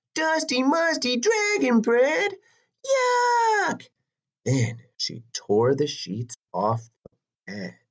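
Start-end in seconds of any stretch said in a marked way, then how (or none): 0.2-3.9 very high shrieking scream with "yuck" drawn out. Narrator reads the princess's line to Herbert the dragon: screamed. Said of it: "but the princess screamed".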